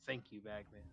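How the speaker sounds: hushed, soft half-whisper. A player's character thanks a hand that gave a high five, half-whispering. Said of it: "I'll whisper".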